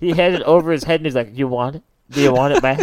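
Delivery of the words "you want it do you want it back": mock teasing, like an old man. Retelling keeping a bracelet out of reach overhead: imitating teasing like an old man to a child. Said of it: "an old man doing it to a child".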